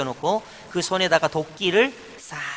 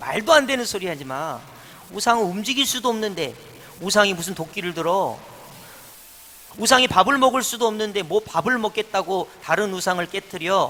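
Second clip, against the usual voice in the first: ordinary talk, nothing marked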